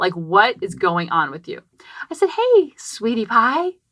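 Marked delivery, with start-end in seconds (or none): 2.3-3.7 sugary-sweet, syrupy, pitched-up voice. Retelling what she said to a four-or-five-year-old girl, in a sugary-sweet voice. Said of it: "Getting all sweetsy, sweetsy".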